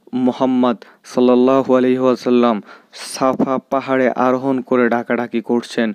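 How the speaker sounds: ordinary delivery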